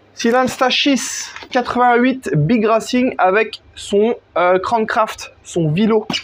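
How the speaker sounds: slow fake English accent. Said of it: "l'accent anglais, mon gars?".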